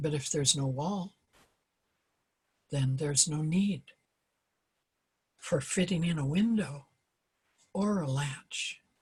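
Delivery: slow delivery with long pauses. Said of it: "I'm gonna read it slowly".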